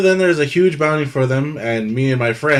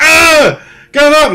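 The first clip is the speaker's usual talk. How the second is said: very high, very loud, shrill pained shriek; 12 semitones higher, 10 dB louder than usual. Voicing a burning NPC, leg on fire: screaming in pain. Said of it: "he's screaming".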